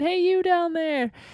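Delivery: mock, high, full-throated yelling as loud as possible. Recounting calling out to people far below, retelling a loud yell. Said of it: "I was yelling as loud as I could".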